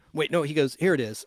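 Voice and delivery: plain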